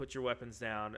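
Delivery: ordinary delivery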